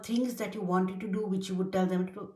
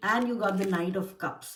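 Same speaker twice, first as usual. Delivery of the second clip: ordinary talk, nothing marked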